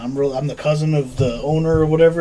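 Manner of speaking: usual speaking voice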